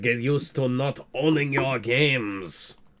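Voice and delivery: put-on French accent. Speaker gives a line as Ubisoft: French accent. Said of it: "My French accent is usually a lot better than this".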